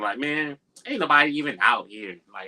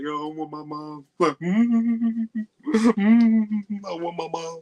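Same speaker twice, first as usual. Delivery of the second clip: very slow, high, drawn-out blubbering, whimpering cry; 9 semitones higher than usual. Retelling a movie scene where a scared character cries: imitating someone crying. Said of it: "He's, like, crying".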